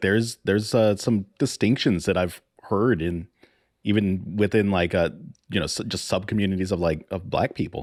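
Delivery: ordinary talk, nothing marked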